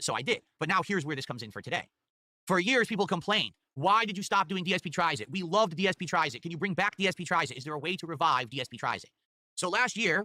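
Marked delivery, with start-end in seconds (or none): none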